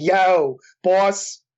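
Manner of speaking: Philadelphia accent. Answering how to describe the Philly accent: Philly accent. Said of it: "I could do it more. It's like".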